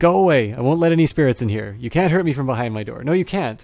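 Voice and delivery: shrill, loud, high, creaky shrieking voice. Unseen person answering over an intercom from behind a door, high-pitched creaky shriek. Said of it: "a high-pitched, creaky voice shrieks out".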